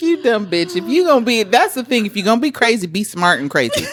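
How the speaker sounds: ordinary delivery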